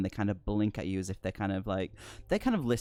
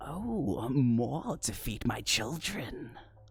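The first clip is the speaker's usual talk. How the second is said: slow, warped, twisted giant monster voice; 2 semitones higher than usual. Narrating a dark scene, voicing a giant creature in a twisted voice. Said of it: "you hear this kind of twisted voice go going".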